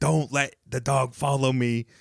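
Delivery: mock, mild, half-yelled delivery. Retelling what a woman at the front door yelled to another person; retelling a yell. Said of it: "she's like yelling at another crackhead".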